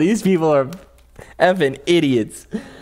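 laughing too hard through words. Reading a news report aloud and commenting on it, laughing too hard. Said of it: "I'm laughing too hard".

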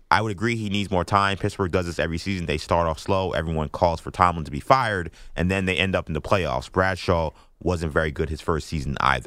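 ordinary talk, nothing marked

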